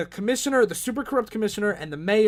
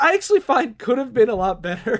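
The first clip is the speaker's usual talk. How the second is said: ordinary delivery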